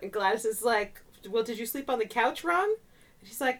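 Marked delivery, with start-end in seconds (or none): none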